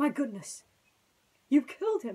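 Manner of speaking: loud gasping cry on a caught breath. Narrator reads a colonel reacting to a man being shot, gasping. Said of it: "the colonel gasped".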